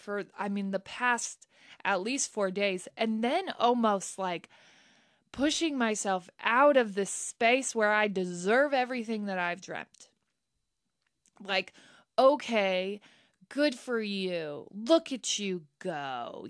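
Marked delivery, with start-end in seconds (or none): 12.2-16.5 spiteful, hateful, mocking, drawn-out tone. Retelling what others say about the speaker's success, imitating a hateful tone. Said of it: "in a hateful tone".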